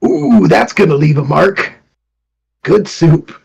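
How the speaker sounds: loud, relishing, savoring sitcom character voice.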